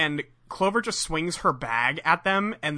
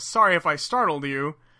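ordinary delivery

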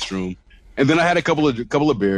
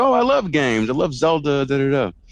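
put-on cute, distinct voice, higher pitch; 4 semitones higher than usual. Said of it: "she has this very distinct voice, very cute".

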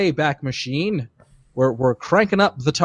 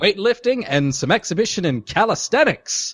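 put-on old-timey transatlantic radio announcer voice, pitched up; 5 semitones higher than usual. Recapping the opening exhibitions of the event, in an old-timey radio voice. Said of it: "I'm going into the old timey voice already".

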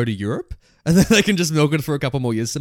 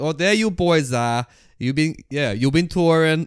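put-on thick New Jersey accent, much slower. Quoting a character from a show they watched with a housemate, thick new jersey accent. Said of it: "it's that new Joyzy accent".

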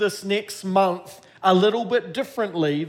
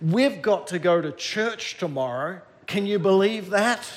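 ordinary talk

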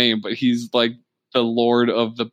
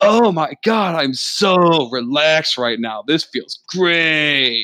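put-on dreamy, relaxed, blissed-out, very slow drawl; 4 semitones higher than usual. Retelling a game character soaking in a bath: imitating a blissfully relaxed character. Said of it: "He's feeling too relaxed".

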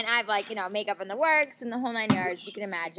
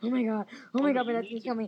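imitated panicked freaking out, hyperventilating. Retelling hiding in a closet during a raid, imitating panicked freaking out. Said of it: "sitting and hyperventilating".

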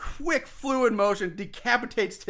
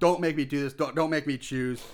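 acted-out mock-begging, lower pitch; 6 semitones lower than usual. Retelling what Sophia said when Walters asked her; acting out begging.

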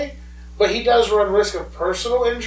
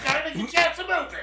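put-on high, snappy, convincing British accent. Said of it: "That was surprisingly good".

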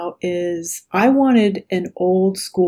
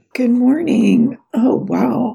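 croaky frog-like voice; 4 semitones higher than usual. Greeting the other speaker at the start of a call: croaky frog-like voice. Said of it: "I sound like a frog already".

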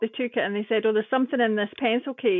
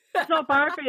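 put-on Scottish accent, higher pitch; 5 semitones higher than usual. Retelling own reply to a security soldier: imitating own Scottish way. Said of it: "That Scottish way like that".

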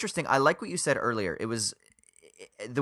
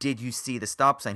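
plain

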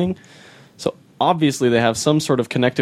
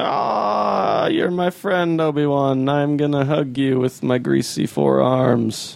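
very slow, drawn-out, fond, chummy, lovey friendly voice; 3 semitones higher than usual. Mocking a disliked prequel character greeting Obi-Wan: Dexter Jettster voice. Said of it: "he's like".

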